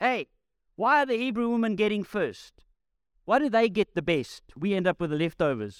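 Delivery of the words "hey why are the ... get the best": put-on high, mild shout calling across a room. Acting out a woman in a crowd complaining about food: imitating a woman shouting. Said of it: "shouts in Greek across the room".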